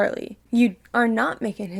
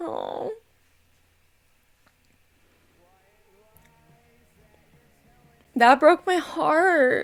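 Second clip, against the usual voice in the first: tearful speech while crying. Reacting to a sad scene, crying while talking. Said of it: "Why am I crying like this?".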